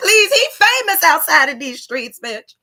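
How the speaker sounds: earnest, pleading, begging tone. Retelling how they begged him to join: imitating own begging. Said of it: "I was begging him, like".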